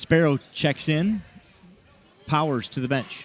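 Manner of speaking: put-on robotic computer readout voice. Calling a substitution during a game: put-on computer voice. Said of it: "Computer voice engaged".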